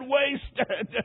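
mock weeping, sobbing, broken-up word. Retelling the dying man falling back: imitating sobbing. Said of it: "Then he sobbed and said".

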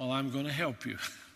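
firm, resolute, stern voice. Retelling a principal's answer to the speaker's mother: imitating Mister Davis's firm voice. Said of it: "he said in a firm voice".

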